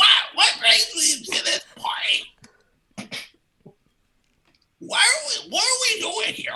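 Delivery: very bad, very high-pitched cartoon duck voice. Playing a character in an improv scene: bad Donald Duck impression. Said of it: "worst impression of Donald Duck ever".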